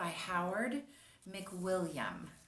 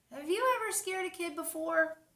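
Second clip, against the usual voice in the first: ordinary delivery, nothing marked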